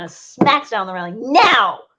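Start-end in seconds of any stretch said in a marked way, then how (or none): 1.3-1.7 loud, high-pitched, furious, temper-losing snap. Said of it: "As she loses her temper".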